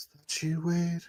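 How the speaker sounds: very high, very soft, faint, hushed weak voice. Retelling a story, the speaker acts out a faint voice calling to wade. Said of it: "faint voice. It goes".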